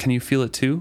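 normal talking voice

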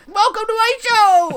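very high building yell. Describing hosts of popular YouTube channels, imitating a yelling YouTuber. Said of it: "going louder and louder as I talk".

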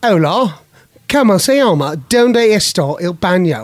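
Spanish spoken with a British accent. Showing the kids' challenge: speaking spanish with a british accent. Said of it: "Spanish with a British accent".

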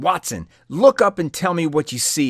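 loud, high, commanding, insistent tone. Holmes, having woken Watson in the night, presses him a second time, demanding. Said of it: "his friend demanded again".

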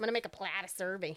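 loud, put-on, strong Midwestern Minnesota accent. Explaining a land replat to the other speaker, saying it in a put-on Minnesota accent. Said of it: "Sound like really Midwestern".

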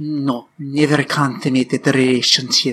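put-on Spanish accent. Tipsy speaker tries her best Spanish accent, doing a Penelope Cruz impression. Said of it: "This is Penelope Cruz. As Catherine of Aragon".

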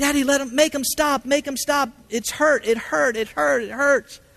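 put-on very high, sobbing and screaming, like a child crying. A father recalling his little boy's cries during repeated IV attempts: imitating a child screaming, crying. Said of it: "And screaming and crying".

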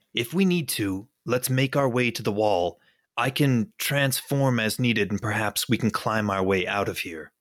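hushed whisper in a put-on voice. Speaking in character to Pine about escaping over the wall: whispering in character. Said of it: "I'm gonna kinda whisper to Pine".

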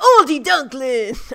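German words said in a fake Boston accent.

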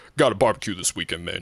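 mock deep man's voice. Retelling what a man who called him [name] said, imitating a deep voice. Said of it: "he had like deep ass voice".

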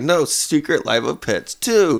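mock high, whiny, childlike voice. Retelling what he said once he got in that whiny voice: imitating a whiny voice. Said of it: "He gets in that whiny voice".

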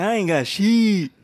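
loud, slow, drawn-out comedian voice. Repeating a line about having no money: Bernie Mac voice. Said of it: "I had to say it like Bernie Mac".

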